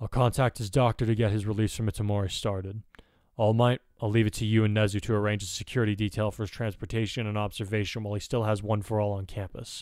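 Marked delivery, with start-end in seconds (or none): none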